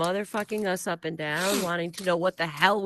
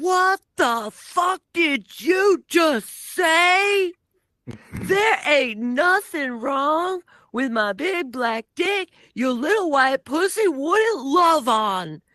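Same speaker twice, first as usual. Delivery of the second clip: aggressive, loud, high-pitched in-your-face street yelling; 9 semitones higher, 8 dB louder than usual. Retelling a stranger who walked up outside the hotel and yelled in his face, imitating someone yelling. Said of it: "he yells at me".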